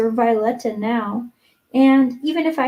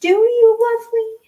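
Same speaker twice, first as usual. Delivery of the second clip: very high, drawn-out exclamation; 10 semitones higher, 3 dB louder than usual. A girl answers her bosom friend's vow of love: cried out. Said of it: "cried Anne".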